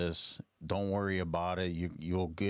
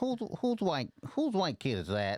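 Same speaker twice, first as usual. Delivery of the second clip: very high, swooping comic voice; 11 semitones higher than usual. Trying out an old comedian impression for a friend: Cat Williams impression. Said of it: "I used to do a pretty good Cat Williams impression".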